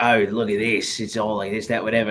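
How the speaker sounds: put-on chattering character voice with Australian accent. Retelling a video where you played your Australian character: Ed Root Australian accent. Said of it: "I played like this Australian character named Ed Root".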